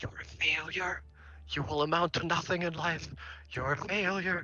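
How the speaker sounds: loud stage whisper. Storyteller voicing a strange obelisk held against a listener's ear, obelisk whispering. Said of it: "It whispers into your ear and it says".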